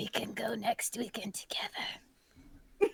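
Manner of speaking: slow, unhurried, leaned-in whisper. Leaning down to another character in a game and whispering. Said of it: "I just lean down and whisper".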